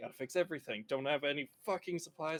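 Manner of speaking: fast muttering under the breath. Speaker voices her character walking off, muttering under her breath. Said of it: "as she's muttering under her breath".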